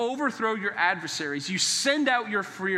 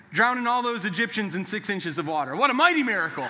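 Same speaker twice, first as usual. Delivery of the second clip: ordinary talk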